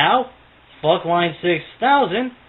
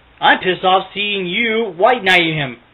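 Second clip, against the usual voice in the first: plain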